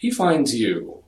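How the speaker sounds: very smooth, silky, projected voice. Narrating a scene, a man at the door speaks in a very smooth voice. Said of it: "a very smooth tone from a handsome man".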